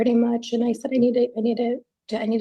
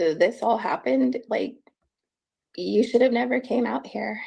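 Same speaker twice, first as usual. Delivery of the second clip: ordinary talk, nothing marked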